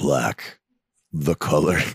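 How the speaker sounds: sultry, very low put-on voice. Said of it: "Can I do it in my sultry voice?".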